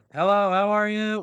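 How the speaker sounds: high, very slow, drawn-out, too-loud yell. Acting out people who don't realize how loud they are greeting you, imitating someone yelling. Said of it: "they yell every time they talk".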